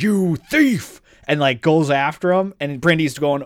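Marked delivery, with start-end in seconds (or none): 0.0-1.0 put-on, pitched-up dragon character voice. Acting out an imagined scene where a dragon catches a thief: put-on dragon voice. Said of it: "the dragon's like".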